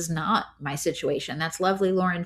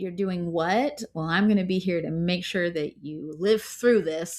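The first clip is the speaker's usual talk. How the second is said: put-on terrified, startled, caught-off-guard father voice. Retelling a father's first reaction to home birth: imitating a terrified dad. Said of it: "he went from kind of terrified".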